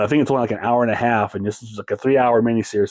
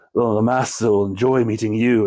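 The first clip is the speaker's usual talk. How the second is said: bored, eerie, polite tone. Imitating an actor playing the film's villain: James Mason voice, bored-sounding. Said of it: "James Mason with that fantastic voice of his".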